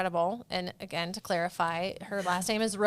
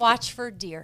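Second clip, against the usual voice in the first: put-on Minnesota accent, louder; 2 semitones higher, 5 dB louder than usual. Asked how to do it, doing a put-on Minnesotan accent. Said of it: "That's a good one".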